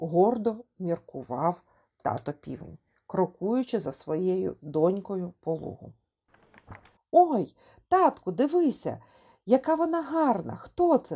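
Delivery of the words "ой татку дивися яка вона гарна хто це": delighted, high, swooping shout full of wonder. A little chick calling to her rooster father while chasing a butterfly, excited shout. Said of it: "Захоплено кричала малеча".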